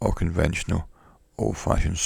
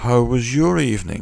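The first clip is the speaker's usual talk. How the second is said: mocking, almost sarcastic, pitched-up tone; 6 semitones higher, 4 dB louder than usual. Reading a story aloud, a grandson asks his grandmother: almost sarcastic. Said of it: "almost sarcastically, as if he's mocking her".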